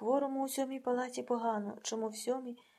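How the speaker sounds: ordinary delivery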